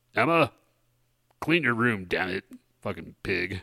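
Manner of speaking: put-on fatherly dad voice, scolding. Answering a listener's request to be told to clean her room: put-on dad voice. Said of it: "you have a more of a dadly voice".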